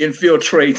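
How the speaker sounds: laughing and sarcastic. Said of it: "I will sarcastically say".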